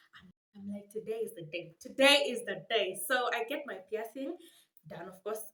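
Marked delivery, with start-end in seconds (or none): 0.9-2.9 put-on thrilled, eager, loud, excited delivery. Retelling the day of a first piercing, acting out past excitement. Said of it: "I remember I was so excited".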